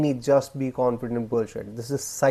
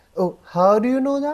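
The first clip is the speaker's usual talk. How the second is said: pitch lifts upward on the final word "that"; 11 semitones higher, 4 dB louder than usual. Speaker demonstrates a habit to avoid, sentences ending like questions: rising questioning intonation. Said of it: "rising tone at the end of the sentences".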